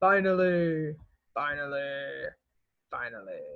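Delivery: deepest possible low voice, as deep as it goes. Teaching a vocabulary word, the speaker demonstrates it for students in deepest voice. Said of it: "use your deepest voice".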